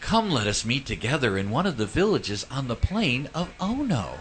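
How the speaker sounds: sugary, syrupy, overly sweet, saccharine delivery. Reading a message from the bible, deliberately in a syrupy sweet tone. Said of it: "I purposely read it that way because I think that that's the way this message came. It was meant to be all syrupy".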